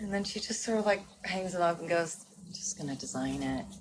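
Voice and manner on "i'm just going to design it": very low, dead flat monotone. Retelling what the costume designer said: monotone Colleen impression. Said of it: "Colleen's very monotone".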